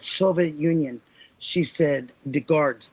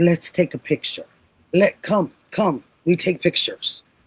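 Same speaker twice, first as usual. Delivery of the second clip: put-on heavy Slavic accent, grandma voice; 3 dB louder than usual. Recalling your grandma from when you were younger, speak in her thick Slavic accent. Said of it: "she had this thick Slavic accent".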